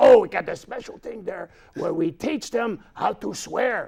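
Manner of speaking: put-on French-Canadian accented voice. Showing how the hockey player character talked: Pierre Puck character voice. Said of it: "he would talk like".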